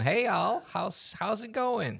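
heavy, thick Southern US accent. Showing how the listener could have sounded, thick Southern US accent. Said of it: "a more thick southern accent ... could have been like this".

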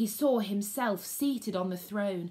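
ordinary delivery, nothing marked

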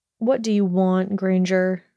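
usual speaking voice

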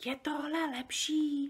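near-silent, barely audible, breath-only half-whisper. Speaking to a giant pained by loud words, a barely audible half-whisper. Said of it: "Sofie se pokusila promluvit úplně neslyšným šepotem".

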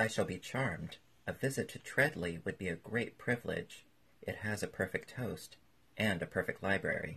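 plain reading voice

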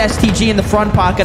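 ordinary talk

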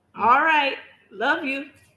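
put-on tiny, small, high little old lady voice. Recalling a two-year-old's goodbye as the speaker leaves: little old woman voice. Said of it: "like a little old woman".

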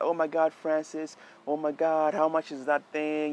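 acted-out frightened, worried, panicky voice. Retelling what the bride said after the lens dropped: imitating a scared bride. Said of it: "she was so scared".

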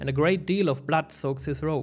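plain reading voice

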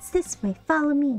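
put-on high, small young girl's voice. Voicing a character's line, speaker tries her as a little girl voice. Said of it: "Should I make her sound like a little girl?".

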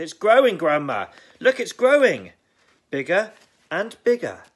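shrill, high, very loud shouting. George, watching the hen grow, yelling to Grandma. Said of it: "he yelled".

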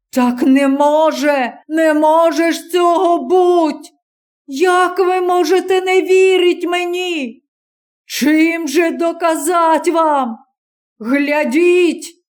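slow, desperate, pleading cry. A stranger holding a revolver turns to the crowd, shouting. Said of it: "закричав".

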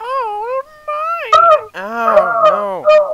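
very high, loud squealing noises. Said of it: "that's why you don't make high-pitched noises".

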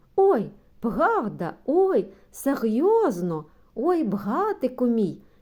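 delighted, joyful, high-pitched squealing cry. Narrator voices Yaryshka after being given the bicycle, squealing joyfully. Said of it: "верескнула вона радісно".

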